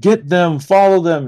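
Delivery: high, commanding, in-character yelling. Narrating a pursuit, voicing a general: General Harris yelling. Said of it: "you hear General Harris yell".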